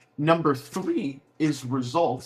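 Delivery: slow words, voice breaking mid-phrase. Speaker listing the parts of a pitch to realtors, voice crack. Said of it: "a little voice crack there".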